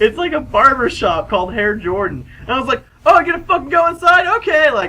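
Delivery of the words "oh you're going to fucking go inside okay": very high, loud, jeering yell. Retelling a parking-lot moment, re-enact yelling at a man walking into a barber shop. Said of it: "so I'm yelling at him".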